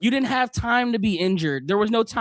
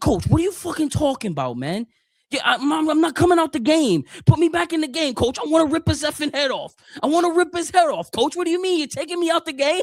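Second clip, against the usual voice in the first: put-on typical Bronx man's accent, pitched up; 8 semitones higher than usual. Retelling an injured eighth-grade teammate arguing with the coach, in a Bronx accent. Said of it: "your typical Bronx guy".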